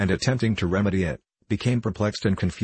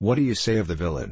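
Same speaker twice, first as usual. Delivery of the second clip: plain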